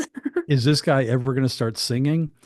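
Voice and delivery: ordinary talk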